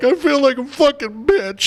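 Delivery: very high, loud, drawn-out blubbering sob. Retelling what a drunk guy said at the bar: imitating a man crying. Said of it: "he's crying".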